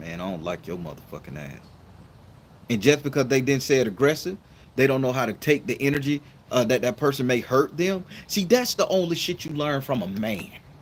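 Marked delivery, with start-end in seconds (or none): 0.0-1.6 very low, very quiet, calm menacing tone. Speaker acting out what someone might say to another person, in a low tone. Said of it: "in a low tone say".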